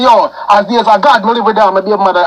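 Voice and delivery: plain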